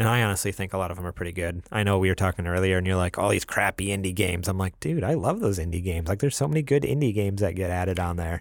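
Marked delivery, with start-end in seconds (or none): 3.2-4.5 put-on gruff, grizzled old man voice. Quoting a friend's remark about indie games; gruff old man voice. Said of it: "your impression of me made me sound like a grizzled old butthead".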